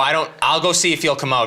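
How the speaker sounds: ordinary delivery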